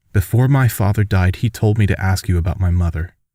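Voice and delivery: ordinary delivery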